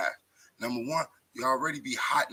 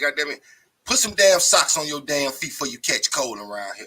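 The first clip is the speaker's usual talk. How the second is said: loud put-on old grandma voice; 2 semitones higher, 9 dB louder than usual. Recalling what the elders used to say about catching cold, do your grandma's voice. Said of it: "that's my grandma's voice".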